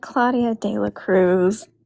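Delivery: slow, beaten, deflated, defeated. Retelling how Paul answered after being told off, imitating Paul sounding defeated. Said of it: "he sounded so defeated".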